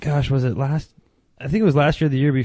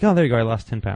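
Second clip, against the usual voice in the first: ordinary delivery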